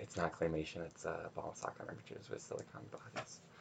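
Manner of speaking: hushed, breathy, very quiet ASMR-style whisper. Repeating a correction after being asked to whisper it: whispering. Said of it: "Just whisper it".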